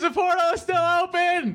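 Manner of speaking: high-pitched, distant off-mic yelling voice.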